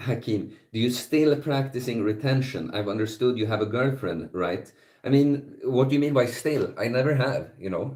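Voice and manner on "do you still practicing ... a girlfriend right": normal talking voice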